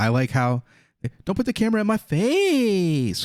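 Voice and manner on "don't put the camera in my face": very high, slow, strange way of talking. Mocking how a speaker in the clip said the line: mimicking someone's way of talking. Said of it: "Why do you talk like that?".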